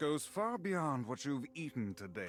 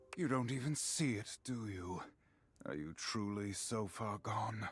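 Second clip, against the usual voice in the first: put-on brooding demon hunter voice, lower; 4 semitones lower than usual. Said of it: "I can't cope with the Illidan voice".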